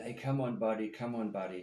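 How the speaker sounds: ordinary delivery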